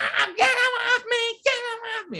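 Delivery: very high-pitched, distressed scream. Retelling how a girl reacted when held down by the speaker's friends, retelling her screaming. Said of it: "she's screaming like".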